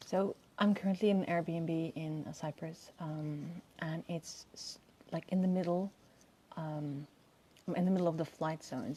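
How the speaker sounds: subdued, low-key, soft, kept-down talking. Greeting everyone from outside an Airbnb in Cyprus, speaking a little quietly. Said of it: "my voice is a little low because I'm outside".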